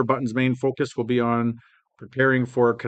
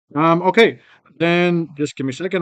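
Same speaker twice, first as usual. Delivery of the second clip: louder, higher voice projected from the diaphragm. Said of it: "Speak, speak from the diaphragm".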